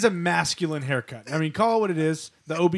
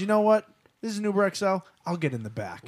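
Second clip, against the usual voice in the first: ordinary talk, nothing marked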